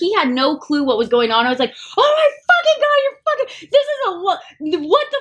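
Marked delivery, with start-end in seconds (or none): 2.0-5.2 mock euphoric hysterical screaming, much higher pitch. Retelling screaming into a brother's ear after great news, retelling euphoric screaming. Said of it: "I was screaming in my brother's ear".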